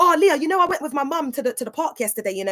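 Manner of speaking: rattled off at breakneck speed. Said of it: "speaking at, like, a hundred miles an hour".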